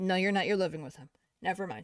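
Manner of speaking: ordinary talk, nothing marked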